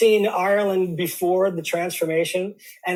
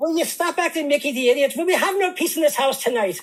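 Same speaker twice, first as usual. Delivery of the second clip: put-on convincing Irish accent, mother-like, pitched up; 7 semitones higher than usual. Repeating an old household scolding at a co-host's request: Irish accent. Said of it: "it sounds sort of convincing".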